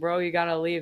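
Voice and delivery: ordinary talk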